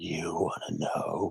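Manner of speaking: hollow, empty, very quiet whisper. A character with his sword drawn answering the one who lifted him up, very hollowified voice. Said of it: "He said in a very hollowified voice".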